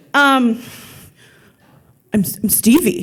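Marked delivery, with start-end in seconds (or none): 2.1-3.0 dim-witted, dumb tough-guy voice. Retelling meeting Stevie, in a dumb thug voice. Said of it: "it's my dumb thug voice".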